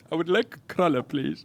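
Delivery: quiet put-on Indian accent. Speaker coaches another speaker to commit to the bit, mock indian accent. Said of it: "You gotta turn into that fucking Indian".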